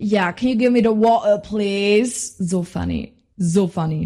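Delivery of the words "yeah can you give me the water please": put-on British accent. Recalling pretending to be tourists with friends, the speaker puts on a british accent. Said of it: "so diesen ähm, britischen Akzent".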